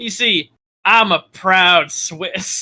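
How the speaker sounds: put-on heavy, thick American southern accent, slow drawl. Joking in a chat about the Swiss national anthem, in a very southern accent. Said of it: "I say in a very southern accent".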